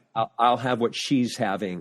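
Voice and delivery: ordinary talk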